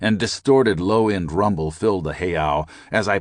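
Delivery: plain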